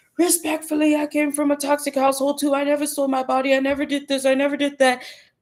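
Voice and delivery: fast aggressive delivery. Imitating an angry woman the speaker would have called out: imitating fast aggressive talk. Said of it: "talking really fast and like masculine and aggressive".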